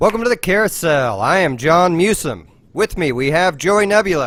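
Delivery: shouting. Opening the show and introducing the others, yelling. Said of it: "Why are we yelling?".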